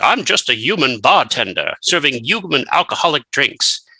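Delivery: put-on big, bold British accent. Imitating a vampire character pretending to be a human: Laszlo voice. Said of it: "he has a big British voice".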